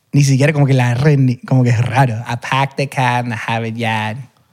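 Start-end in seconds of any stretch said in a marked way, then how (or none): 2.2-4.2 soft northern American English accent. Showing how people in the north would say a phrase, northern US accent. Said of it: "y en el norte dirían".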